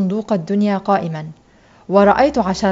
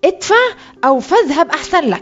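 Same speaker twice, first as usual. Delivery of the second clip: high, menacing, threatening shout; 7 semitones higher than usual. A snake charmer spots the boy circling his crowd and shouts threateningly at him. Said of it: "فصاح بي مهددا".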